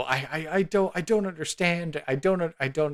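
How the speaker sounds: high, hysterical sobbing, tripping over words. Narrating for the party, voicing the mayor as guards escort him out: hysterical crying. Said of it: "the mayor is just like hysterically crying".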